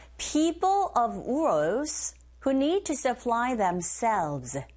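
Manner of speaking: very slow, careful model reading. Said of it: "listening one".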